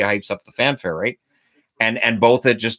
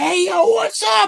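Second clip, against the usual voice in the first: pumped, very high, energetic, hyped-up delivery. Showing how she'd have to sound on TikTok instead of monotone, hyped-up TikTok voice. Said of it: "hype yourself up".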